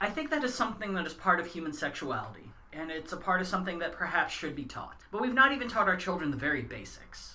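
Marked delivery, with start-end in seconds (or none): none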